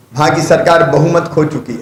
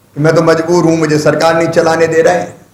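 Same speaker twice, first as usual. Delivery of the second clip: normal talking voice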